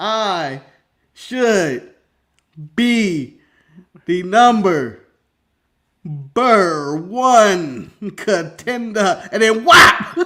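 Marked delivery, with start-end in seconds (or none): 0.0-9.3 very slow drawl, broken up mid-phrase. Recapping a wrestling promo, imitating how she was talking slow. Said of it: "she's just talking slow, like".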